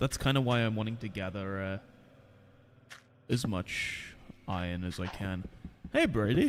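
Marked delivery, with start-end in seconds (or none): 5.9-6.5 voice breaking very high and loud. Greeting another player while mining: voice cracking. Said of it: "My voice cracked like high hell there".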